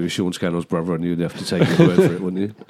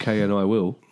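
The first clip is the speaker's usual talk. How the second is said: usual speaking voice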